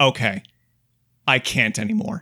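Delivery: exasperated, fed-up voice at the end of patience. Imagining Death fed up with endless questers, acting out an exasperated Death. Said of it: "an exasperated Death being like".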